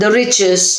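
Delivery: plain reading voice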